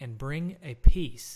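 ordinary delivery, nothing marked

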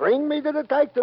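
play-acted man screaming loudly, high-pitched. Telling Danny what the man demanded, retelling the man's scream. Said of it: "he screams".

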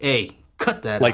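acted firm, serious, stern voice. Recounting how a man told him off: imitating a stern tone. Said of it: "He told me in like a stern".

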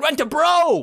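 said with exclamation. Showing how to say Rent-A-Bro with an exclamation point: exclaimed Rent-A-Bro. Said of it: "It was exclamation point there, so you gotta be like".

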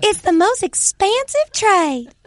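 very high, slow, drawn-out country bumpkin voice. Joking about how a trade headline sounds: country bumpkin voice. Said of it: "a country bumpkin saying it's expensive".

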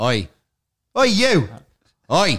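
very slow, drawn-out, confrontational oi. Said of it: "how you were gonna say "oi"".

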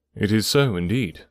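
plain reading voice

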